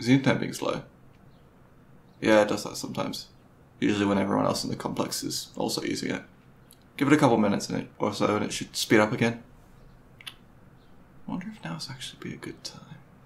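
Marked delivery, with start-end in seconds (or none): 10.3-13.0 very quiet, slow, under-the-breath muttering. Thinking out loud to himself after explaining the slow internet, quietly, to himself.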